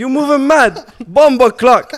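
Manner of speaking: put-on Jamaican accent. Taking a turn doing the accent: put-on Jamaican accent. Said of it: "That happened to the Jamaican accent".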